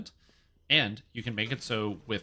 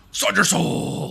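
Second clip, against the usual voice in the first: excited shouting, much higher and louder; 10 semitones higher, 12 dB louder than usual. Calling out a move in the middle of a game, excited shout. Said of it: "Sorry for shouting".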